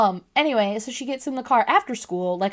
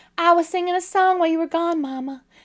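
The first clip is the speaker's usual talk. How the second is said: put-on childlike country accent, pitched higher; 8 semitones higher than usual. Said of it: "I keep giving her an accent".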